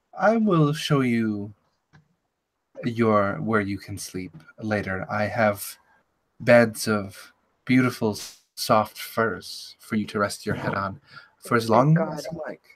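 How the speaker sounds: faraway echoing voice. In a story scene, a woman raises an eyebrow and offers beds, distant echoey voice. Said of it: "that same sort of distant, echoey voice".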